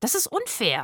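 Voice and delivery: aggrieved, protesting, complaining tone. A character objects after one companion mocks his boast and another laughs; complaining. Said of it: "beschwerte sich Rufus".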